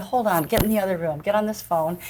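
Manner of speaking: usual speaking voice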